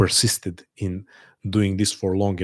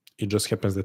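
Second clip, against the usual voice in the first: normal talking voice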